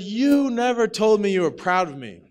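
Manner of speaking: acted high-pitched yell, thrown out hard. Retelling a fight with a father, imitating own past yelling. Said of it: "So I yelled this".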